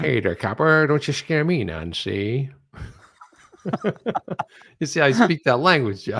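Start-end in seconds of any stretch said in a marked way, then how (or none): 0.0-2.5 put-on old-time 1940s movie gangster, tough-guy voice. Asked to read one aloud, the speaker uses a 1940s movie gangster voice. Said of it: "they talk like that".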